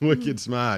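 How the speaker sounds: put-on Boston accent. Joking about a caller being smart: Boston accent. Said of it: "He was trying to do a Boston accent".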